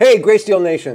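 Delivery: very loud, booming shout. Opening the recording with a greeting to the audience: yelling. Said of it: "That was yelling, wasn't it?".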